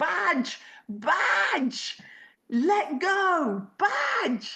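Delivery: very high, very drawn-out screaming calls. Retelling a dog owner calling from the bank: imitating an owner screaming. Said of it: "The dog owner is screaming".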